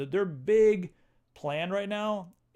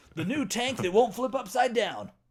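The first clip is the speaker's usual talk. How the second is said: hyped, pitched-up nineties tv commercial announcer voice; 6 semitones higher than usual. Joking about turning into an ad, nineties commercial voice. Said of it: "I'm turning into a nineties commercial".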